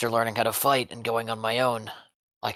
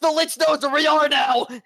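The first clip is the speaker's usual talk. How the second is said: sudden shrill outcry, very high and loud; 7 dB louder than usual. Voicing Boris, who realizes something while walking away: yelling. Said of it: "and then yells out".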